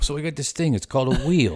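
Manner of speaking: put-on New York accent. Imagining a Shark Tank skit, the speaker voices someone pitching the wheel, New York accent. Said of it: "I gave them a New York accent".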